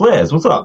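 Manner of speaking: goofy, high, cartoonish character voice. Retelling how a friend reacted on seeing flares: imitating someone like a cartoon character. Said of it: "like a fucking cartoon character".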